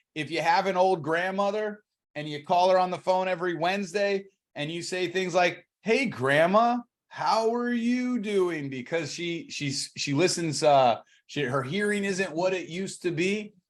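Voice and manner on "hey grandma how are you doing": high, slow, clear, deliberate delivery. Speaker demonstrates calling an old grandmother on the phone, at a slow pace. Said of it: "That's the right pace".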